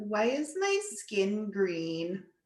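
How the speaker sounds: put-on swooping sing-song character voice, wide pitch swings. Doing an impression of Marie Curie for the audience. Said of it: "this is my impression of Marie Curie".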